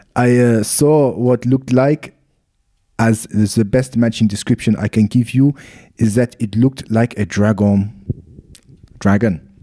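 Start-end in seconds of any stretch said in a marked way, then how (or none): 0.1-7.9 put-on French accent. Quoting the local police's description, in a put-on french accent. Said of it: "I'll do it in a French accent".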